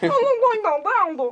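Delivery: squeaky, very high, loud, slow cartoon kid voice. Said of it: "É tipo batatinha do manda-chuva".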